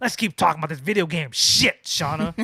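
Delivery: harsh, hostile, mean-sounding, aggressive delivery. Repeating own line to show how mean it sounded: imitating own mean tone. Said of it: "I sounded so mean, like".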